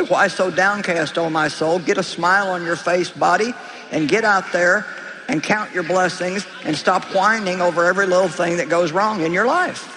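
normal talking voice

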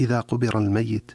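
ordinary talk

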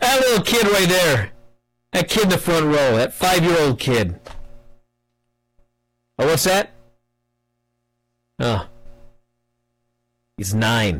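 put-on flat monotone. Retelling how he goes on pointing at kids, imitating a monotone drone. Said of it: "he's monotone, just blah, blah, blah".

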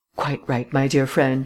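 plain reading voice

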